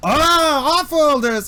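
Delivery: high, loud vendor-style shouting voice.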